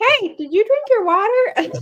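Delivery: very high, loud, squeaky puppet voice. Discussing advertising as interruption, one speaker imitates the TikTok videos: Angry Elmo voice. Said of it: "like Angry Elmo".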